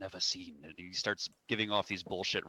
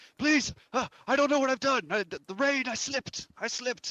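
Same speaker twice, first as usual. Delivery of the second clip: showy, loud, very high begging and pleading; 8 dB louder than usual. In a role-play, a character hanging off a ledge pleads, making a scene. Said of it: "he's like making a scene".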